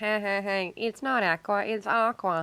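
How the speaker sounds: scornful, taunting, mocking voice. Mimicking everyone who teases the speaker for saying Aquaman, in a mocking voice. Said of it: "when you do that mocking voice".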